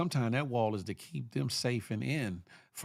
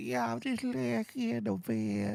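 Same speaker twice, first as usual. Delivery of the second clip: put-on very high, creaky, drowsy old-lady drawl; 11 semitones higher than usual. Mocking a friend who is lying in bed: imitating a sleepy old lady. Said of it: "Acting like an old ass lady".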